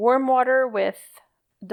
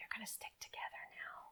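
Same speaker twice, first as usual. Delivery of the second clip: soft, gentle, hushed whisper, very quiet; 2 semitones higher, 27 dB quieter than usual. Pressing wet fibers together, whispering to the fibers. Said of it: "tell the fibers in a whisper".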